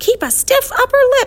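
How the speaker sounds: very high, shrill, loud squawking bird cry. The wiffle bird flaps past the boys, in a squawking bird voice. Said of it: "she squawked".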